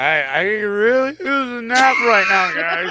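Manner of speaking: put-on high, drawn-out, drunk, about-to-die voice. Redoing a line in character on request: drunk, about-to-die voice. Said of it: "drunk, I'm about to die voice".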